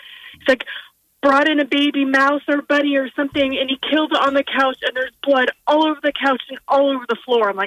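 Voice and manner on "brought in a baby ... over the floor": high, breathless, hyperventilating panicked rush, acted out. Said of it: "my son is, like, hyperventilating".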